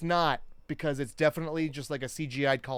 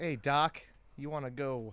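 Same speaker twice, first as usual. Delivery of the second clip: put-on cartoon voice, quieter; 5 dB quieter than usual. Comparing two famous voices, do a Bugs Bunny voice. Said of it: "Joe Pesci and Bugs Bunny the exact same voice".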